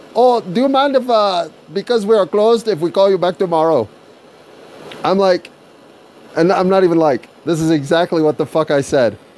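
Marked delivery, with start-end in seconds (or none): 0.1-3.8 put-on Indian accent, higher pitch. Retelling what a phone agent said: imitating an Indian accent. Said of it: "dude with Indian accent gets back on the phone and says".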